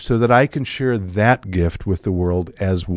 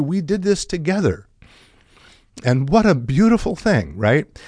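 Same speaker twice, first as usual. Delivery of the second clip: emotional, choked-up voice, higher pitch; 6 semitones higher than usual. Telling listeners how a performer shared credit with the orchestra and audience, choked up. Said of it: "And here I am getting choked up".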